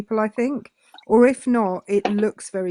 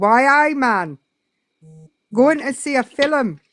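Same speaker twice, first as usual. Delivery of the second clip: badly done put-on Geordie accent, loud and slow; 4 semitones higher, 5 dB louder than usual. Speaker shows the one phrase they can say in a Geordie accent. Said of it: "can only say one thing with a Geordie accent".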